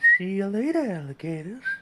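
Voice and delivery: words whistled through. Trying the goodbye line again with the whistle: whistling while talking. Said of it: "double whistle on that one".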